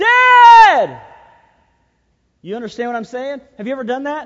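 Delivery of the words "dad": shrill, booming, drawn-out, urgent yell. Retelling calling his dad in an emergency, imitating a child yelling for dad. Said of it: "I'm yelling".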